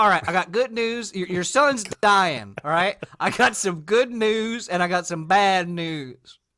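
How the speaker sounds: put-on American Southern accent. Telling how a professor made the first synthetic dye, voicing him in a Southern accent. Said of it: "I don't know why I made him Southern".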